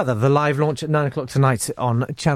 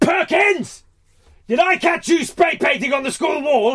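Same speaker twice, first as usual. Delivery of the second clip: stern, much higher, shouted barking teacher voice. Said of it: "'cause he'd be like".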